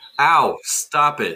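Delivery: put-on, yelping monster creature voice. Voicing a skag that was just punched: skag voice. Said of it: "that's my skag voice".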